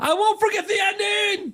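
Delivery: very high-pitched shout. A fan previewing what they will shout at a game reveal, shouting. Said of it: "except I'm going to shout".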